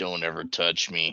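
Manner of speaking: slight, mumbled delivery. Voicing Musashi looking at the others: slight mutter. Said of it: "slightly mutter".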